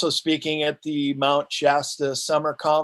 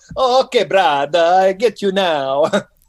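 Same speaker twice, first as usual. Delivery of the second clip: put-on thick Italian accent, raised voice; 4 semitones higher, 7 dB louder than usual. Retelling an author's reply to you, do Leo Lyon Zagami with a thick Italian accent. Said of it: "said this thick Italian accent".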